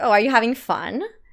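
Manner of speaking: put-on taunting tone, said smiling. Retelling a reply to a guy who laughed: imitating own smiling taunt. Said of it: "smiling at him, and I was like".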